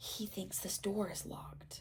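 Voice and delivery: hushed whisper. Harry, after hearing Filch cursing in rage nearby, whispers. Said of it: "Harry whispered".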